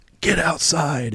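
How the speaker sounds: high, mild, kept-small drill-officer yell. Retelling officers ordering the class outside: imitating screaming officers. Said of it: "they start screaming".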